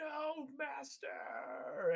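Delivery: very high, shrill, elephant-like cry. Voicing an elephant crying out in pain to its master: elephant screaming out. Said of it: "one of the elephants screams out".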